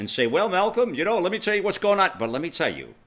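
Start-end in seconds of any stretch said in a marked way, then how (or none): 0.3-2.1 mock snide, high, sarcastic tone. Acting out a sarcastic comeback Helene might give: imitating Helene being sarcastic. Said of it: "Helene can come back and be sarcastic".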